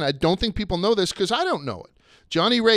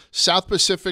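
south pushed higher and louder than surrounding words. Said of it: "I put the emphasis on that syllable".

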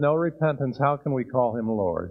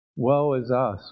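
ordinary talk

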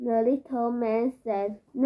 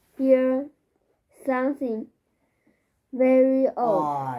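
ordinary talk

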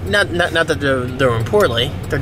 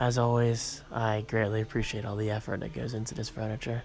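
low, hushed half-whisper under the breath; 5 semitones lower, 14 dB quieter than usual. In a very quiet place, the speaker offers thanks before moving on, half-whispering. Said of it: "I'm whispering as it's so quiet here".

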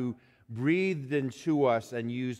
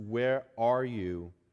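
acted, put-on heartbroken tone. A preacher imagines god calling out like a parent, acting out a heartbroken parent. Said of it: "with the heartbreak of a parent".

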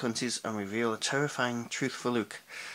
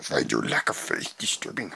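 put-on little alien voice, lower pitch; 13 semitones lower than usual. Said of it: "That sounds in Yoda voice".

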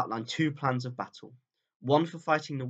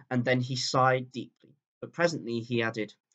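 ordinary delivery

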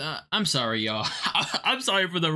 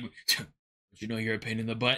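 very deep, low, dropped voice; 8 semitones lower, 5 dB quieter than usual. Reacting to a video, imitating what the man just said: imitating a deep voice. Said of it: "his voice deep".

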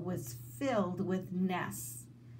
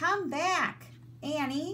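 high-pitched shouting; 9 semitones higher than usual. Jack calls after Annie as she runs off down the hill, shouted. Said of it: "Jack shouted".

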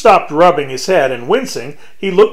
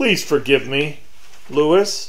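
tired, weary voice, much quieter; 5 dB quieter than usual. Jonathan apologizes to Lewis, who kneels in the closet in tears, in a tired voice. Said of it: "said Jonathan in a tired voice".

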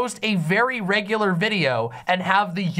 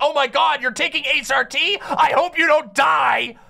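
mock unhinged rant, higher and slower; 6 semitones higher, 3 dB louder than usual. Speaker mocks a hostile commenter reacting to someone transitioning, imitating an unhinged rant. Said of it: "some guy who goes fucking insane is like".

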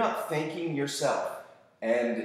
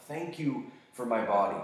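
usual speaking voice

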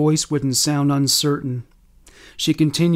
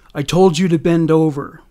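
ordinary delivery

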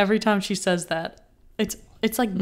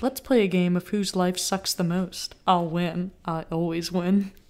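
put-on deadpan sitcom-style voice. Recapping a TV scene, the speaker quotes Meredith's line, mock-deadpan Meredith impression. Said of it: "like, deadpan, like, I hate my life".

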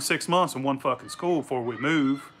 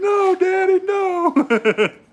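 very high, loud fake sobbing; 7 dB louder than usual. Retelling being smacked as a child: imitating fake crying. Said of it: "I'd fake cry".

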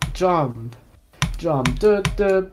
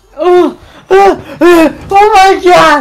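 very high, loud screaming reaction. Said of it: "Do the Kino's reaction".

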